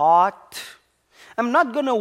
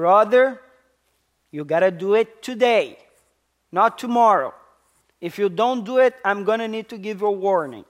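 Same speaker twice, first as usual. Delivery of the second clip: play-acted no-nonsense, firm, insistent tone. Retelling how they urged their brother to act today, acting out a firm voice. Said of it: "And a voice that sometimes it was firm".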